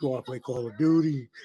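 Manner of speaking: deep, low, bass-heavy male voice. Imitating a friend calling late at night: imitating a friend's deep voice. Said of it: "your deep ass voice on the other line".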